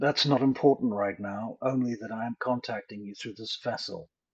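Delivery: put-on male voice. Voicing a possessed woman who speaks in a man's voice. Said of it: "she says in a man's voice".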